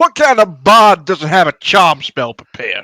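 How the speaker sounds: full-lunged, very loud, high yell. Halfway down the stairs, a player's character yells up at the bard, yelling at top of lungs. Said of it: "I yell at the top of my lungs".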